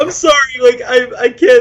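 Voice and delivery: high voice, words broken up by laughter. Apologizing to the other speaker mid-conversation: laughing while talking. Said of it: "I'm laughing so hard".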